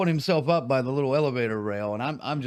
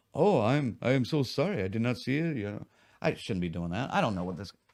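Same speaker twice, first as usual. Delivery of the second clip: quiet, subdued, reserved, hesitant tone; 3 semitones lower, 4 dB quieter than usual. Recounting a man's apology for berating the bar staff, imitating a quiet, reserved man. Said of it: "He was quiet and like".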